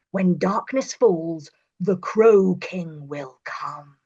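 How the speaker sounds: low, slow, eerie, drawn-out spooky voice. Reading a story aloud as a character: low, spooky voice. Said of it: "Bram said in a low, spooky voice".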